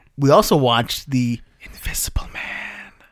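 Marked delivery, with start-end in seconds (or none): 1.6-2.9 slow, drawn-out, hushed whispered delivery. Podcast host introducing the news and the movie they watched, whispering. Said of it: "I don't know why I'm whispering".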